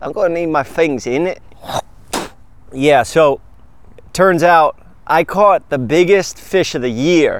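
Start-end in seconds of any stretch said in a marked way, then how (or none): 0.0-1.4 put-on British accent, th turned to f. A barber telling a fishing story repeats the line in a put-on british accent. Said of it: "I almost sounded like a Brit there".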